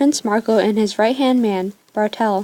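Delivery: ordinary delivery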